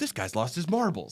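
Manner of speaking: cartoony delivery. Retelling how a movie character takes the phone and speaks: cartoony delivery. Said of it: "very, like, cartoony, like, takes the phone and goes".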